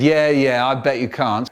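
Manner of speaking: plain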